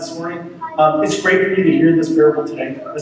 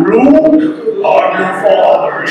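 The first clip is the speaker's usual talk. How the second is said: deep, low, menacing villain voice; 3 semitones higher, 5 dB louder than usual. Teaching a group to remember a chapter, the speaker leads them, Darth Vader voice. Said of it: "your best Darth Vader voice".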